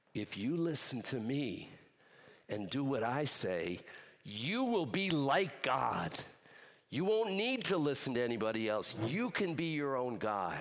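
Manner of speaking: put-on sinister, menacing, tempting voice. Retelling Genesis, the speaker voices the other voice in the garden, in a sinister voice. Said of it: "It's a sinister voice".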